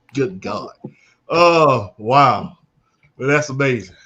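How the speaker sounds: speaking through laughter. Reacting to another speaker's story, laughing while talking. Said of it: "I can't stop laughing".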